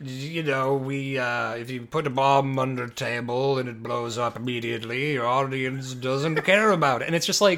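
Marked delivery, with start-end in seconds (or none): 0.0-7.1 put-on slow, low, unhurried, drawling English accent. Imitating Alfred Hitchcock explaining suspense: Alfred Hitchcock impression. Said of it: "Alfred Hitchcock is that, where he's just like".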